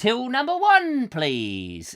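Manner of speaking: sing-song recorded tannoy announcement voice. Reading out a store's queue announcement: technical announcement voice. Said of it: "technical voice that you have to have".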